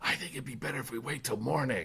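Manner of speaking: small, little half-whispered stage whisper. Describing what a character says as people march toward a tomb, in a little half-whisper voice. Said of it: "talking in his little whisper voice".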